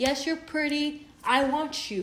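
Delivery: ordinary delivery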